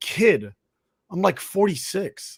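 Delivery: mock exasperated, soft, slow, drawn-out disbelieving mutter. Retelling a golfer's reply after being called kid: imitating Pat Perez, exasperated. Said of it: "exasperated at the freaking audacity".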